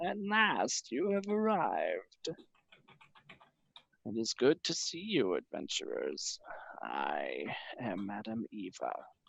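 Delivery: put-on soft, crackling old crone voice. An old crone at a crystal ball greets the arriving adventurers: crackling crone voice. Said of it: "her voice crackles like dry weed".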